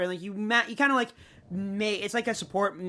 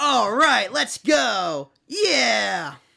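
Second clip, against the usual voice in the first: booming, drawn-out, gruff, slow bellowing voice; 4 semitones higher, 8 dB louder than usual. Retelling playing the Monster Hunter demo, imitating the Great Sword Hunter voice. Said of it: "he just sounds like the fucking Jeff impression that Oni does".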